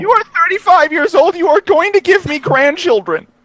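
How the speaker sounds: shrill, very high mother voice. Pretending to be another speaker's mother and scolding him: imitating a friend's mother. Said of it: "I will be playing your mother".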